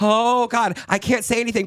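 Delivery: panicking, voice very high, squealing. Retelling a drag performer's reaction on set: imitating panicking Cornbread. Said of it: "And Cornbread is panicking".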